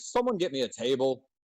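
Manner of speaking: mild, held-in token shout. Narrating a fantasy game scene, the speaker voices a character in the loudest booming voice. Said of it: "in like the loudest kind of booming voice".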